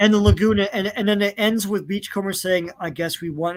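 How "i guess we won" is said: put-on, very somber, grave, solemn, heavy-hearted delivery. Retelling how a cartoon episode ends: imitating Beachcomber's somber voice. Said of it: "in a very somber voice".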